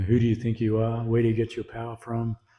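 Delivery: plain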